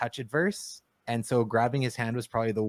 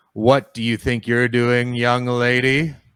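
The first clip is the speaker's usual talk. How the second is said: very loud, big billowing bellow; 9 dB louder than usual. As the narrator voicing the man approaching you with a club, use a loud billowing voice. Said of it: "in a loud billowing voice this time".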